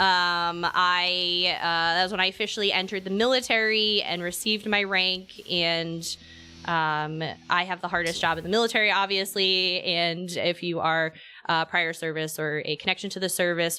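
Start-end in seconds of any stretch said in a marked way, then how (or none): none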